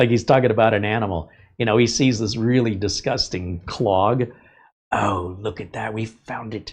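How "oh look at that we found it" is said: delighted, marvelling nature-show presenter voice. Imitating the plumber finding a clog: Steve Irwin impression. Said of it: "he sounds like Steve Irwin".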